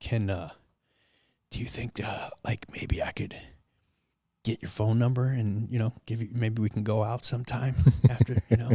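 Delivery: speaking very quietly, hushed. Retelling asking a flight attendant for her number: imitating speaking very quietly. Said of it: "So I'm being so quiet about it".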